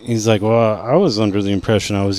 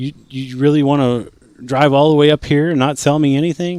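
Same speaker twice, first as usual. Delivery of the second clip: acted-out high, sweet, friendly tone; 5 semitones higher than usual. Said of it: "changing his tone, trying to be nice".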